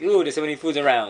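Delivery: ordinary talk, nothing marked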